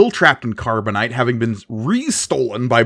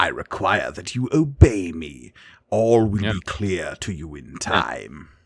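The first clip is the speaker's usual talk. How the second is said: low, evil, villainous space emperor character voice; 6 semitones lower, 5 dB quieter than usual. Retelling a scene, speaking as the Emperor: Emperor voice. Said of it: "And the Emperor's just like".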